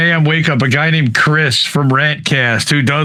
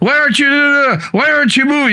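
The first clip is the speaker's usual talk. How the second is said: mock yelling, higher pitch; 11 semitones higher than usual. Acting out jail guards yelling at a woman: imitating guards yelling. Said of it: "it's like they're yelling at her".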